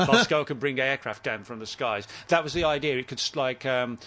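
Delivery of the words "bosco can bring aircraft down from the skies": normal talking voice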